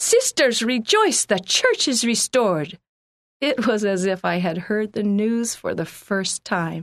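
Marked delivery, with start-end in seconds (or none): 0.0-2.8 high, loud, joyful exclamation. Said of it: "exclaimed with joy in his Russian accent".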